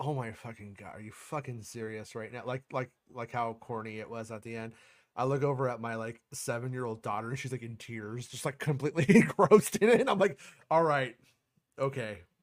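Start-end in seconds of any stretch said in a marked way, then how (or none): 0.0-2.4 put-on exasperated eye-roll tone, lower and quieter. Retelling their own reaction in the theater; retelling exasperated eye-roll. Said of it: "I was like fucking eye rolling".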